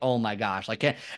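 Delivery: put-on embarrassed voice. Recounting facing the wrong way on a gym machine, retelling own embarrassment. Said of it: "like super embarrassed".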